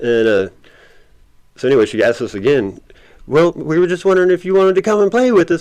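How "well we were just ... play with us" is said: high, playful cartoon-puppy voice. Retelling what a woman asked them, imitating a puppyish tone. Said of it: "puppy type tone".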